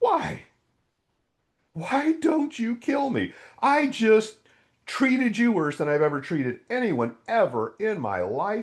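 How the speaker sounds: play-acted, very high, sobbed-out tearful crying. Recounting overwhelming love from God, the speaker replays their words while reenacting crying speech. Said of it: "I started crying and I said".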